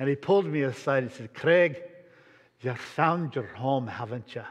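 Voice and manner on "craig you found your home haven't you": rough-attempt Scottish accent, confiding tone. Retelling a friend pulling the speaker aside in Scotland: imitating Willie John MacDonald's Scottish accent. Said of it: "I know I'll butcher the accent".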